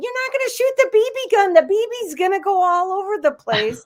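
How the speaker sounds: mock, very high, shrill, high-pitched scream. Retelling how the mother reacted to the BB gun: imitating a mother screaming. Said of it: "She's screaming".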